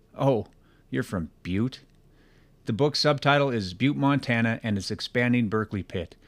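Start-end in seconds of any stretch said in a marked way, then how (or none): 0.2-1.8 put-on condescending, demeaning tone. Quoting how people react on hearing they're from butte, mock-condescending tone. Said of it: "in a demeaning tone".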